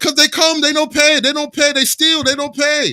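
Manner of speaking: high, loud, belted put-on Japanese accent. Retelling what a restaurant owner said: imitating a japanese accent. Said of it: "his little fucking Japanese accent".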